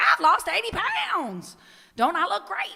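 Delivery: animated, showy, boastful voice, high, loud, swooping. Retelling what a friend said by doing an imitation of her: imitating Ann Barnes. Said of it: "I'm gonna do some imitations of her throughout".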